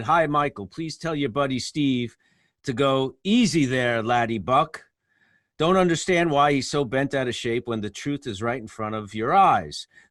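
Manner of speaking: plain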